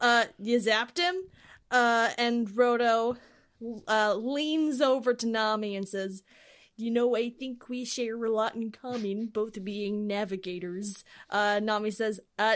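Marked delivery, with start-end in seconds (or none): 6.8-11.0 bad, poorly done nerd voice. Playing Roto leaning over to Nami, do a shitty Saint Cloud impression. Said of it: "my shitty Saint Cloud impression".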